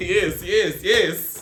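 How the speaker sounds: put-on very loud Caribbean accent in a preacher style. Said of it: "sound like somebody's Caribbean pastor".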